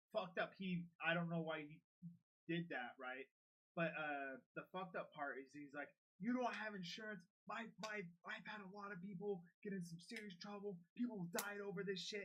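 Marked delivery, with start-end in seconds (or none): 6.2-12.2 heated scolding rant, yelling. Quoting the man who yelled at him over having no insurance: retelling a yell. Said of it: "he was like yelling at me".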